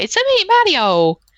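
very high, slow, stretched-out cartoon Italian accent. Joking about a Nintendo app idea, the speaker does a Mario voice. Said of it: "Only if you had Mario's voice".

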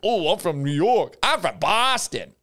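clumsy, bad, put-on old grandmother voice. Picturing Jack Easterby mid-impersonation, doing his bad grandmother impression.

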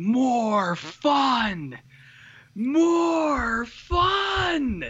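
very high, shrill, acted screaming, fun stretched out. Retelling a movie coach screaming at kids to have more fun: imitating someone screaming. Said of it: "yelling at 'em, like, screaming at them".

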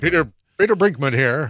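put-on news anchor voice. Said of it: "sounds like a total, like, news anchor".

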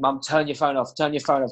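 ordinary delivery

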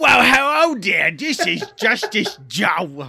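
loud put-on British accent. [name] opens the class pretending to be the co-host, imitating Joe in British accent. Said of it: "I'm not going to talk in that accent".

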